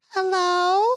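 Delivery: put-on very high, squeaky small-child voice. Imitating a guy who talked on the phone, in a little kid voice. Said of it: "he would talk in a little kid voice".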